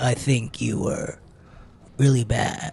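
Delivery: slow, hushed, breathy whisper. Doing an impression of the sensei Soma: Soma impersonation.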